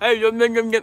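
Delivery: talking with mouth full. Reacting to comments while eating, talking with mouth full. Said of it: "with food in my mouth".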